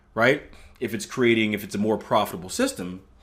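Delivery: ordinary delivery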